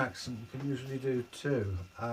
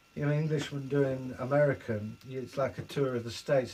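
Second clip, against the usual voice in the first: ordinary delivery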